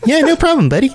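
very high, squeaky little-guy voice. Asked to burrow over and look around, the little guy answers in a super high-pitched voice. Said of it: "He's got a super high-pitched voice".

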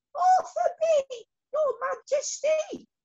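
tiny, very high, slow, squeaky little voice. Narrating a story, a little bee at the back answers the queen: squeaky little voice. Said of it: "a little voice from the back squeaked up".

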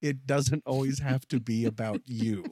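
plain, simple delivery in normal voice. Retelling another friend's remark at the wedding: imitating a quiet remark. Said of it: "I heard him quietly say".

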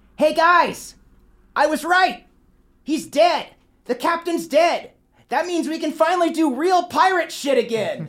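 very high-pitched shouting through a megaphone. Game master voicing a tiefling woman calling out to pirates, shouting through a megaphone. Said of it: "pulls out a megaphone, and says".

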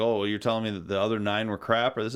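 ordinary talk, nothing marked

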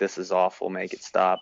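ordinary delivery

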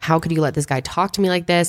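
ordinary talk

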